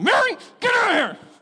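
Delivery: very high, shrill, loud yelling. Retelling how a woman kept going back out and finally yelled: retelling a yell. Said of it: "and starts yelling".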